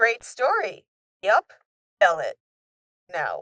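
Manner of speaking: put-on dry, blunt, matter-of-fact deadpan, no fuss. Retelling a cartoon scene line by line: imitating a deadpan delivery. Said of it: "The deadpan, just tell it".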